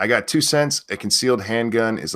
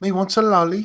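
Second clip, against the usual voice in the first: very high, cartoonish, put-on British accent; 11 semitones higher than usual. Answering talk of a fungus giving a Peppa Pig accent: my best Peppa Pig British accent. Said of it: "That's my best".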